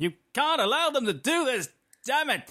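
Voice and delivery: very high, over-the-top shout, climbing up very high. Imitating the weird thing an actor does with his voice when shouting: high-pitched shout. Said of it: "he does that weird thing with his voice when he shouts. It's like, ... He sort of goes a bit higher".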